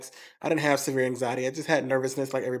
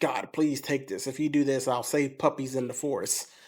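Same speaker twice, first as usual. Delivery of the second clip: put-on pleading, begging voice. Retelling begging God during months of panic attacks: imitating own past begging. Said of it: "beg with God".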